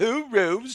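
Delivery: put-on Cockney accent. Retelling a horror film villain's line with his puppet: imitating Lithgow's Cockney accent. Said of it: "so he's like a Cockney".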